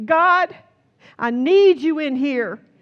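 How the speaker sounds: loud, high crying out.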